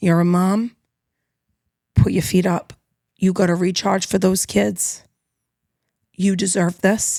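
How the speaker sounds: put-on just a light hint of Jamaican accent. Quoting what she said in yoga class, with a little Jamaican accent. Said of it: "a little bit of Jamaican accent in there".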